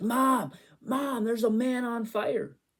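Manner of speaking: put-on very high, drawn-out, frightened child's yell. Retelling seeing smoke as a small child: imitating own childhood yell. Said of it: "I yelled down the stairs".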